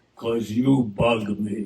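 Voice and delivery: deep, low, disembodied pronouncing voice. In a joke, a voice answers the complaining man: booming voice. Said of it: "And a voice booms out".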